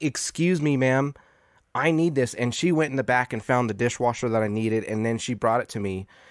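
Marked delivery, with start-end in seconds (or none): 0.0-2.3 put-on entitled tone. Retelling asking a store worker for help: retelling a demanding Karen tone. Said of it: "that sounded very Karen of you".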